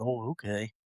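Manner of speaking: utterly unbothered, flat and unexcited. Retelling Riley's answer when told to get ready: imitating an unexcited reply. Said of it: "Just not excited at all".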